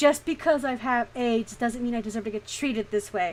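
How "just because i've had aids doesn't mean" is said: ordinary delivery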